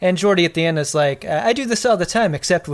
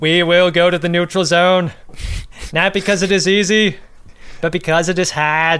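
badly put-on Boston politician voice; 3 dB louder than usual. Imitating JFK giving a speech about the neutral zone: brutal JFK impression. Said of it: "my J F K is brutal".

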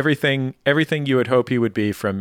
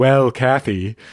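put-on slow, measured voice; 3 dB louder than usual. Retelling a friend's story, quoting the famous author: Maya Angelou voice. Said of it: "said in her, like, Maya Angelou voice".

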